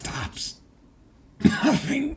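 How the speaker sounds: eerie monster-like voice.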